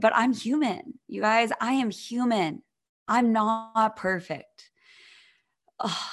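emotion catching in the throat. Opening up to listeners about lows on a podcast: choked up. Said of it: "I'm getting kinda choked up".

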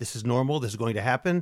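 ordinary talk, nothing marked

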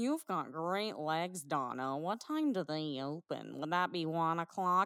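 low, creepy, flirtatious male voice. Retelling what a creepy guy in the movie said: imitating a creepy guy. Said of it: "You did a great impression".

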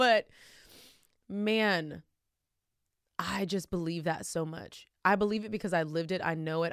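fighting back tears. Sharing her faith with another speaker, holding back tears. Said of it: "I'm trying not to cry".

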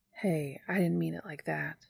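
gently and softly spoken. Dean speaks to Castiel, sensing his distress, softly. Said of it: "Dean says softly".

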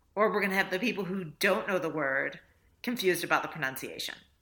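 ordinary talk

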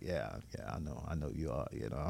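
very hushed, low mutter under the breath. Retelling her greeting on the porch and replying to her: retelling a mutter under breath. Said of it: "That's what I'm saying under my breath".

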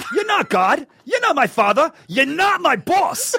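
high, rising, indignant tough-guy outburst.

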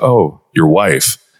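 downward inflection. Showing how to parrot someone's words back, with a downward inflection. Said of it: "even the downward inflection".

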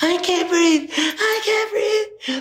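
very high, stretched, drawn-out wailing scream. Retelling a chase, the speaker reenacts the person being chased screaming. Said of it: "he just starts screaming".

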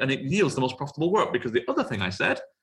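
fast, excited rush of words.

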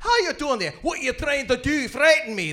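very high, very loud Scottish accent. Performer demonstrates the reset phrase that gets them back in the accent: scottish accent. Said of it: "That resets me".

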